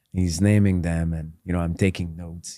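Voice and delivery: ordinary delivery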